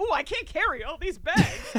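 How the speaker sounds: high, TV infomercial-style voice. Retelling a scene where a character carries bags: imitating an infomercial pitch. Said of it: "an infomercial like".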